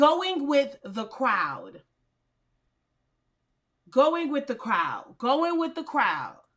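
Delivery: slow, deliberate, drawn-out repetition. Repeating a phrase several times over: saying it slowly. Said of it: "I'm going to say it slow".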